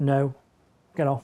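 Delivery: a bit stern. A trainer shows the dog's owners how to tell the dog to get off, a bit stern. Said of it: "that's when you do need to be a bit stern".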